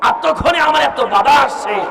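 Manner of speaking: raging, ranting voice.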